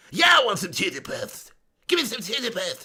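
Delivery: put-on bratty cartoon kid voice with swooping pitch. Slipping back into the impression after a quick aside, Cartman voice. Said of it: "I am actually Cartman in real life".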